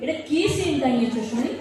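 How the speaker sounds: plain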